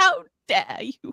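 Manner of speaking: horrible, clumsy put-on British accent. Joking on a live stream, repeating a retort: bad british accent. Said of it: "it's my best British accent I can give".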